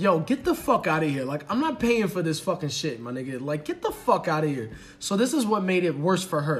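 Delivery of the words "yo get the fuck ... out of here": mock-furious, acted-out angry voice. Retelling how a woman told off a man who wouldn't pay, acting out her anger. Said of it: "She's so mad".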